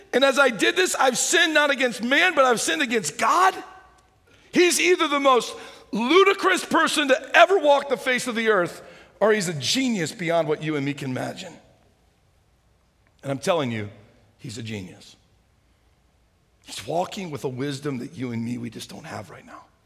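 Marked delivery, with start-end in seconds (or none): 0.1-3.5 mock incredulous shout, high and loud. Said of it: "And you're saying".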